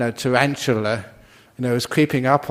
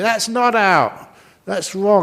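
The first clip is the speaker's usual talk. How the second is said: mock screaming, high-pitched; 8 semitones higher than usual. Imitating a cricket fan yelling at the TV: imitating someone screaming at the TV. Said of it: "you scream at the T V".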